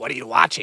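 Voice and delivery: low, monstrous, demonic voice. Retelling a girl's question, the speaker imitates her demon voice. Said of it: "She literally did a demon voice".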